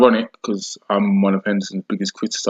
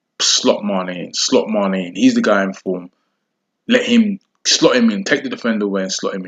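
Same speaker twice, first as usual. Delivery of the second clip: normal talking voice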